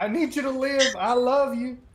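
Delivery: pleading falsetto, pitched way up, very high. Narrating, voice a creature calling out to Bob while trying to sound like Cassie. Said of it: "I'm gonna make it sound like Cassie".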